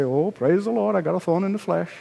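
breezy, glib, offhand tone, acted out. Contrasting his pleading with what he didn't say, in a mock-glib tone. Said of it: "glibly say".

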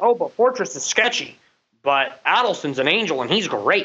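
ordinary delivery

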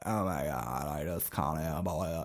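put-on very quiet, hushed, croaky girly voice. Mocking hot girls in ads: imitating a croaky girl voice. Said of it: "doing that croaky".

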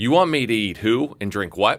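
mock completely earnest, dead serious, no-joke tone. Retelling the wife's question to the priest: imitating someone dead serious. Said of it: "she was dead serious".

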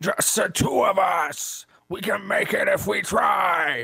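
very high put-on character voice, pushed way up. Taking a turn at impressions, trying out a Strong Bad impression. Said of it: "let me try Strong Bad".

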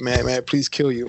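put-on, very polite tone. Retelling asking a game player's permission to kill him: imitating a very polite request. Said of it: "in a very polite manner".

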